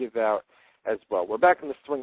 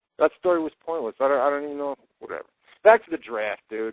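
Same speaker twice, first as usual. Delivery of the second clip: usual speaking voice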